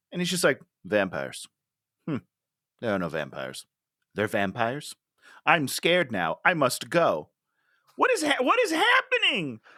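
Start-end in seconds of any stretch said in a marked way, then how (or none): 0.8-7.3 flat, wooden, unbothered delivery without fear. Retelling how flat an actor delivered his scared lines: imitating flat delivery. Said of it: "he's so flat".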